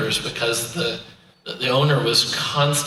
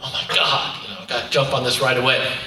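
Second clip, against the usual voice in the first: put-on panicked tone. Retelling hearing a client's voicemail, imitating own panic. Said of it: "I'd get that panicked feeling".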